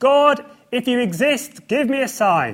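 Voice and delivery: very high, very loud, high-pitched calling out. Recalling a man at the school who stood up and called out; retelling a raised-voice plea. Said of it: "said in a raised voice".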